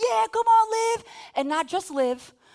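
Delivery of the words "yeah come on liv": encouraging, high, drawn-out cheer. Retelling cheering for a player at a volleyball game: imitating cheering. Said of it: "me and Lex were like".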